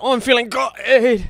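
put-on English accent, slow and overdone.

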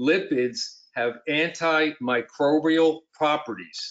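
slow, drawn-out, careful, deliberate delivery. Making a point to listeners after announcing it, spoken slowly. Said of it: "I'm going to say it slowly now".

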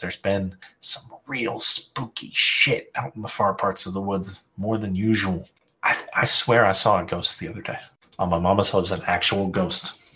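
secretive, conspiratorial, privately confiding tone. Voicing a character who lowers her head to share a rumor: conspiratorial tone. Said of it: "kinda conspiratorially".

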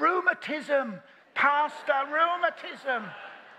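put-on pained old lady voice, high, slow crying.

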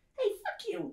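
very high, tiny little creature voice. Narrating a game scene, voicing a figure grumbling in the garden: little tiny voice. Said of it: "You hear a little tiny voice".

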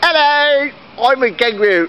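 put-on squeaky, very high Australian accent. Storyteller voices a kangaroo in the story, kangaroo with Australian accent. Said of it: "all kangaroos speak an Australian accent".

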